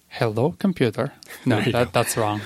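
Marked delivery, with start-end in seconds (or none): 0.1-1.1 clumsy, awkward put-on Russian accent. Asked to do it with the accent, the speaker greets the computer in an awkward Russian accent. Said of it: "That was almost a little like awkward Russian".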